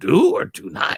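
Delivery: put-on little alien sage voice. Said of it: "you didn't do the Yoda voice".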